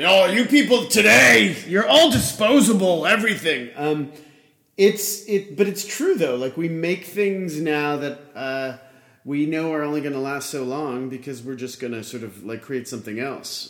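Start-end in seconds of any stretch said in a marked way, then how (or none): 0.0-3.7 put-on old man voice, much higher, louder. Speaker mocking his own complaint about disposable things, old man voice. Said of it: "I just sounded like an old man".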